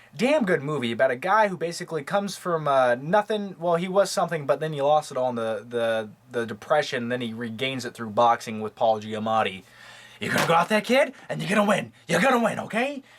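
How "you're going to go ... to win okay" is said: rushed, rattled off fast, a bit high. Describing a boxing movie, quoting the trainer: Paul Giamatti impression. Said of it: "That's my Paul Giamatti impression".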